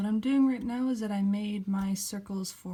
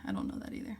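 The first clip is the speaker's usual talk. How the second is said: soft hushed whisper. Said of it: "why am I whispering".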